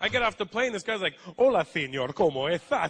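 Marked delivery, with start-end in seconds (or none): 1.4-2.9 loud, slow Spanish spoken with a lisp. Retelling how a guy greeted the speaker off the plane, Spanish with a lisp. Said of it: "they speak Spanish with a lisp".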